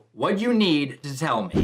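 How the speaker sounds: ordinary talk, nothing marked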